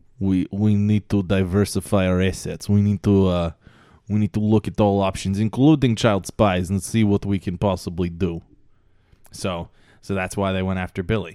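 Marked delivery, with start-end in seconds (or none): 0.2-8.4 put-on Russian accent, louder. Continuing the KGB story as prompted, in a decent Russian accent. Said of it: "you have a decent Russian accent".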